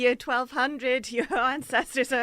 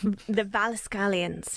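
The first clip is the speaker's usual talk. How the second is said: middle syllables of the word in a Scottish accent; 4 semitones lower than usual. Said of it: "then went really Scottish".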